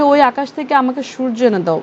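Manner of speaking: ordinary talk, nothing marked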